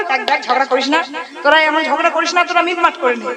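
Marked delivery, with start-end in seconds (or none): none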